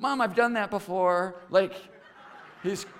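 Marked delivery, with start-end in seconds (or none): 0.0-1.4 put-on child's yell, distant as if from another room. Retelling what a young son yelled back from another room: imitating a child yelling. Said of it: "he yells back to her".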